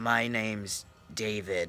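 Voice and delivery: eerie, creepy, hushed voice. Retelling what an unknown man said to the speaker, imitating David's creepy voice. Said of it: "He had a creepy voice".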